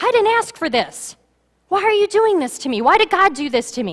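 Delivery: furious, very high outburst. Retelling a story, the speaker acts out a woman's outburst: imitating an angry woman. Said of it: "She's angry".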